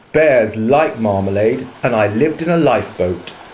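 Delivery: ordinary delivery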